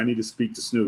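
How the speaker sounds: usual speaking voice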